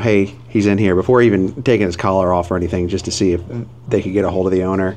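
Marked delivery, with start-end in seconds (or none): none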